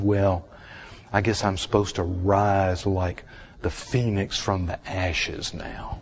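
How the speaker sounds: ordinary talk, nothing marked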